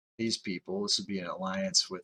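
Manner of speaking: plain reading voice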